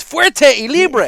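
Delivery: very excited, very high and loud. Showing how the cigar brand's name should be said: very excited. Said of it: "You gotta be very excited when you say it".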